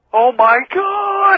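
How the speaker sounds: screamed out, very high-pitched. Retelling riding past a hooded figure with a sickle: retelling own scream. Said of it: "I'm screaming by now".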